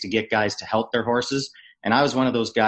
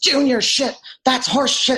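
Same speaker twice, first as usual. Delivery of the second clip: shrill, very high, ranting screaming; 4 dB louder than usual. Retelling a coach screaming at a player in the hallway: imitating Quenneville screaming. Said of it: "He starts screaming at me again".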